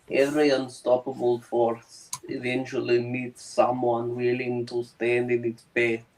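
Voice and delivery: put-on soft-spoken with a slight Russian accent. Host reads a viewer's chat message as Colossus: Colossus voice, slight Russian accent. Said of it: "speaking with a slight Russian accent".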